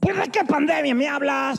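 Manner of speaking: very high voice with puffed-out cheeks. Retelling an interviewee's reply when asked about the quarantine: Kiko voice, cheeks puffed. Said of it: "con la voz de su querido personaje Kiko, me infló los cachetes".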